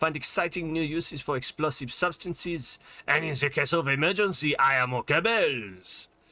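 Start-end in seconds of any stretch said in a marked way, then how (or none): 0.0-4.6 vague fake French accent, higher. Reading tutorial text aloud: vague put-on French accent. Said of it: "we're going vaguely French".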